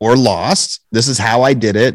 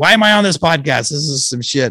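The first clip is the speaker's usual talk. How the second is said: fed-up, heated, pitched-up angry outburst; 5 semitones higher than usual. Retelling what a woman yelled when she thought she was muted: retelling an angry yell. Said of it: "she starts yelling like".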